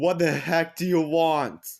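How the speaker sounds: acted furious, angry yell. Speaker retelling how they yelled at him, acting out an angry commanding tone. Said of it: "in an angry, commanding tone".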